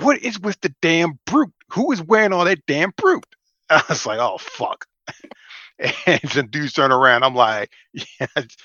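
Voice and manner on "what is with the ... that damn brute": put-on, loud, high, carrying blurted outburst. Retelling what she said in a crowded movie theater, imitating her saying it loudly. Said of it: "she says as loud as fuck".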